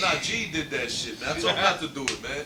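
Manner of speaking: usual speaking voice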